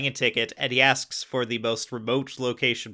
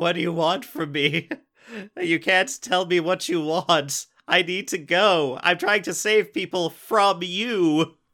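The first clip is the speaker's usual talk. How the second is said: put-on, high-pitched screaming; 6 semitones higher than usual. Describing a show's comedy montage to a co-host; imitating someone screaming. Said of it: "screaming into the sky".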